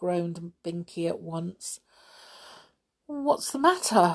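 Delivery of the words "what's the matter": scared, anxious, high-pitched. Molly asks Binky a question after the window slams: scared. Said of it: "asked Molly, scared".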